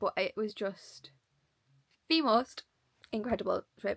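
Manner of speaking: hiccuping while speaking. Describing a favourite trip to listeners while talking with hiccups. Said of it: "Sorry, I've got hiccups".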